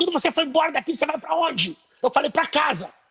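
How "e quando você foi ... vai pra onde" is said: loud, bossy, demanding shout. Retelling an immigration officer's questioning, imitating a shouting officer. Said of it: "e falando alto, e gritando".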